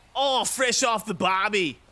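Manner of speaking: put-on Australian accent. Trying out accents during baseball commentary, in a put-on Australian accent. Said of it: "Sometimes you go Australian as well".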